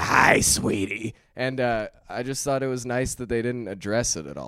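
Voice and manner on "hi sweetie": put-on loud, aggressive old-lady smoker voice. Describing a guy they wished was featured more, the speaker quotes him in an old lady cigarette voice. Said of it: "It was like the old lady cigarette voice".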